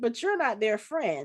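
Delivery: ordinary talk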